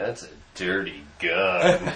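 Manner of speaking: very deep, low, slow, deliberate delivery. Retelling what a friend just said about a gun: imitating Bill. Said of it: "Bill's like".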